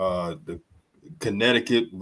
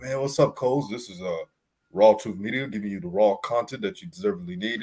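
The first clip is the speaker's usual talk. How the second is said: usual speaking voice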